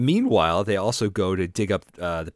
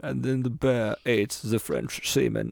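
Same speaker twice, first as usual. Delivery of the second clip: put-on German-accented documentary narrator voice, pitched higher; 5 semitones higher than usual. Trying a Werner Herzog impression, then giving up: Werner Herzog impression. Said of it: "I can't do a Werner Herzog".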